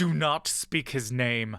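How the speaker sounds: rasping, gravelly voice, seething and boiling with anger. Narrating a story, the man who points at Brother Taira speaks, gravelly low voice seething with anger. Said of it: "he says with a gravelly low voice, seething with anger".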